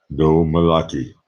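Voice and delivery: put-on Austrian accent. Doing an impression for a viewer's request: Arnold Schwarzenegger impression. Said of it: "Austrian accent".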